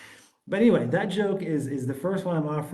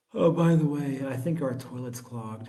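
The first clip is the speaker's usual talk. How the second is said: put-on speech yawned while talking; 2 semitones lower than usual. Retelling a late-night remark from her while lying down: imitating someone yawning while talking. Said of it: "she yawns when she says it".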